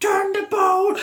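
high, slow, loud, drawn-out scream.

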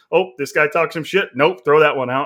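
ordinary talk

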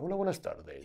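very soft, hushed, soothing, relaxing spa-style voice. Showing how some podcasters talk: demonstrating a very relaxing tone. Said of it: "tonos así muy relajantes".

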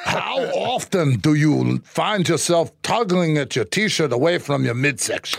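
put-on Austrian accent. Asking a question on request from another speaker: Arnold Schwarzenegger voice. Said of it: "I wanna hear your Arnold Schwarzenegger".

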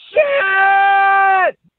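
mock, very high, long, drawn-out shriek of fear. Retelling riding the zipper for the first time: retelling a scream. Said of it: "I'm screaming".

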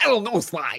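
nerdy cartoon turtle voice. On a podcast, a host shows off his impression: Bentley impression. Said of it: "That's a great fucking Bentley impression".

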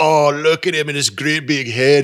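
put-on Irish-Scottish dad accent. Describing a movie, quoting the dad Mike Myers plays, in Mike Myers' Irish-Scottish accent. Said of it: "he's got this Irish Scottish accent".

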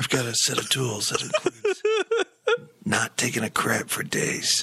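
straining, constipated-sounding voice with swooping pitch. Answering a joke about the voice: constipated Liam Neeson voice. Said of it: "constipated Liam Neeson".

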